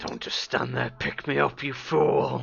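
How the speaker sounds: rough, creaky talking-axe character voice. Voicing the axe Bertha calling to its owner: voice of the axe Bertha. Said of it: "you hear a familiar voice going".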